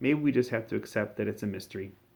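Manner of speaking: ordinary delivery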